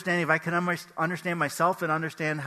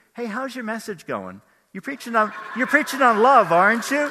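mock teasing, pointed, sassy sing-song, pitched up; 6 semitones higher, 7 dB louder than usual. Retelling a wife's teasing question about the message: imitating a sassy remark. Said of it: "the sass, my sassy wife".

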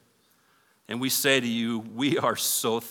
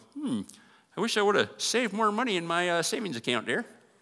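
put-on high, wavering old man voice. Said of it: "Why do I always go to an old man voice".

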